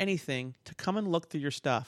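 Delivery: ordinary delivery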